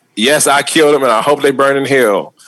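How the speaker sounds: usual speaking voice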